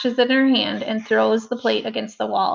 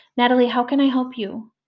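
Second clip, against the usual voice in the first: sweet, calm voice. Narrator speaks to Natalie as if she were a baby, in a sweet, calm voice. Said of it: "talk to Natalie in a sweet, calm voice, as if she were a baby too".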